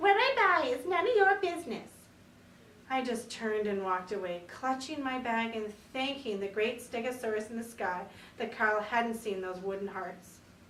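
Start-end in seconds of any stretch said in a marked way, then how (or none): 0.0-1.9 high-pitched, loud, mocking parroting echo. Reading a story where another character mocks the narrator, high-pitched mocking imitation. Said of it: "He imitated me in a high-pitched voice".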